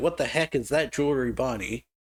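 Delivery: ordinary delivery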